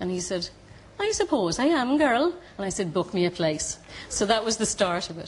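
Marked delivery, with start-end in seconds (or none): 1.0-2.3 terrible put-on Cork accent, high and slow. Retelling a man's reply in a conversation, in a terrible Cork accent. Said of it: "I told you it was a terrible Cork accent".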